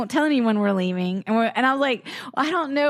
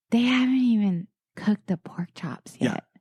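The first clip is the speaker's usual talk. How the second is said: whisper, lower pitch; 3 semitones lower than usual. Speaker retells leaning over to Paul among cousins and dad: retelling a whisper. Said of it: "I lean over and I whisper to Paul".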